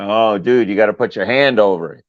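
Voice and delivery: put-on laughing while talking. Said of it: "and they all fucking laughing".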